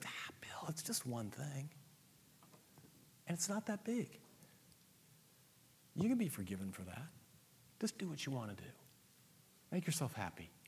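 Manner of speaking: soft, far-off, tempting whisper. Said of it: "And then he whispers to me".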